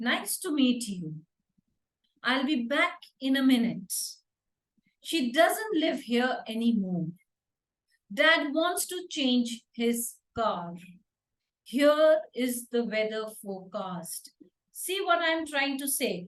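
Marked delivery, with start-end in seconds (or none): 0.0-14.3 pitch falls at the end of every sentence. Speaker demonstrates english statement intonation to learners, falling tone. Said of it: "It's a falling tone".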